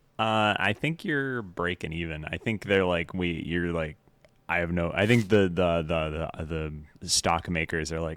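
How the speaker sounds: ordinary delivery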